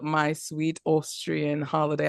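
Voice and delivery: partly convincing put-on British accent. Naming the title of a project the other speaker was booked on: put-on british accent. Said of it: "I know that was a British accent".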